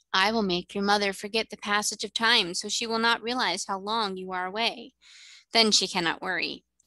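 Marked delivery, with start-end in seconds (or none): none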